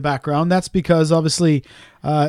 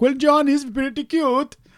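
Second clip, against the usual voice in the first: bad fake Swedish accent, slow and high; 8 semitones higher, 5 dB quieter than usual. Guessing who sent the message, voicing some dude saying it: put-on Swedish accent. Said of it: "What fucking accent is that?".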